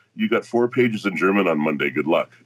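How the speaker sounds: normal talking voice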